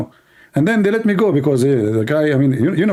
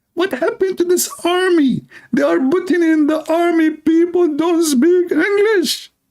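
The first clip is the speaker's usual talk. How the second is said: put-on Texas cowboy accent, much higher, slower; 9 semitones higher than usual. Retelling what a man screaming in his face said, Texas cowboy accent. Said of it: "Texas uh, uh, accent, you know, like cowboy accent".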